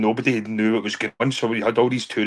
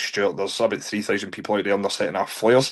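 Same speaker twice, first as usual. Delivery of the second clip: ordinary delivery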